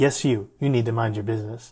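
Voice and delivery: ordinary talk, nothing marked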